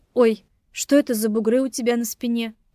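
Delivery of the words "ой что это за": usual speaking voice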